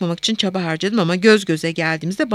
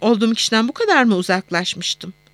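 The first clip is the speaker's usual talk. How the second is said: plain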